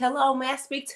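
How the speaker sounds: put-on real thick, heavy Indiana Southern accent. Retelling a caller's phone greeting, in a heavy Indiana Southern accent. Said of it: "He had a real heavy, like Indiana Southern accent".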